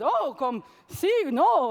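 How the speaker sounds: very slow, failed, bad Italian accent. Retelling what the italian team said on the phone: failed italian accent. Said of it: "I can't do an Italian accent".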